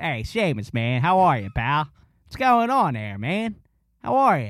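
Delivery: put-on Delaware County accent. Show how a guy you used to work with greets Seamus, in a very Delco accent. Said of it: "he literally talks like this".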